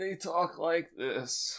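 put-on high, slow old-person voice. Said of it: "as humans age".

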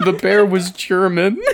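heavy, sad, sorrowful delivery. Offering to talk with someone who says they are not okay, said sadly. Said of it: "you said that so sad".

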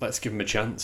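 ordinary delivery

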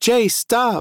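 very high, shrill scream. A narrator reads a character telling the narrator to stop; screaming. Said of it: "Nicole screamed".

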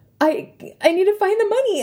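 mock very high, tearful, panicked crying stammer. Retelling a moment at a register without the money, retelling crying. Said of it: "i was like crying".

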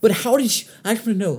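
screaming. Ranting about someone digging through old Instagram comments: screaming. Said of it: "I'm sorry for screaming".

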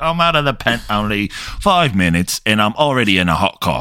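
put-on all-in, heavy Cockney accent. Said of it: "he came in hot with the Cockney accent".

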